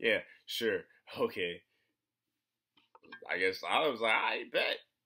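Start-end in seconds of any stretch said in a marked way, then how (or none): 0.0-1.6 louder, put-on laughing, playful joking tone. Retelling what his mom said while playing around; retelling a joking reply. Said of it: "laughingly, jokingly, playing around".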